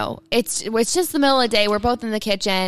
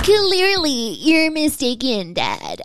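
put-on squeaky, high, sing-song valley girl voice; 5 semitones higher than usual. A daughter answers her dad in their podcast intro in a squeaky valley girl voice. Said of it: "That sounded like a squeaky valley girl".

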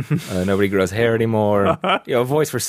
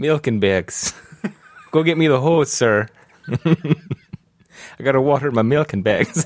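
put-on Canadian accent; 3 semitones higher than usual. Trying out jokey lines together, the speaker does a put-on Canadian accent. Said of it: "let's master our Canadian accent".

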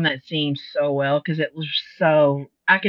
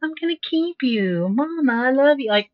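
put-on very high, sweet little-kid voice; 10 semitones higher than usual. Speaker retells what he said to her, imitating a sweet little kid. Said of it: "he said it so sweet".

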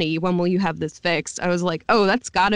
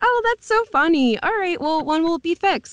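very high, friendly, kind, joking lilt; 11 semitones higher than usual. Retelling how the developers meant the line: imitating a kind, jokey tone. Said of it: "just being really kind".

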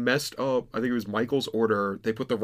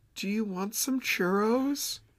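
imitated very soft voice, higher; 10 semitones higher, 4 dB quieter than usual. Retelling a voice from the drive-thru window offering churros: imitating a very soft voice. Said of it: "a very soft voice".

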